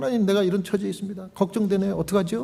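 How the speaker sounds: soft, quick murmured lament. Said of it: "중얼중얼중얼 하면서 하나님께".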